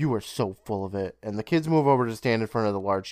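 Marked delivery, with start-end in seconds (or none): 0.0-1.2 huffy, indignant, all huffed-up and dismissive. Retelling a scene where one brother scoffs at the other: huffy Doug voice. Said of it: "Doug gets all huffy and says".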